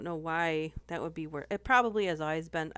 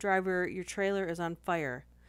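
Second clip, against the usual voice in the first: usual speaking voice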